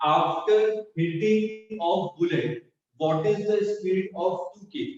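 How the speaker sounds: very slow, drawn-out, careful enunciation.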